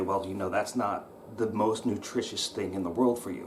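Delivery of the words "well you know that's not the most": usual speaking voice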